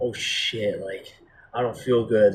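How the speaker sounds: put-on panic, freaked-out, uneasy blurt. Retelling own past words while high: imitating own freaking out. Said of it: "I started to, like, freak out".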